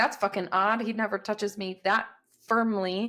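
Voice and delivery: plain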